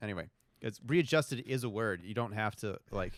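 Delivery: ordinary delivery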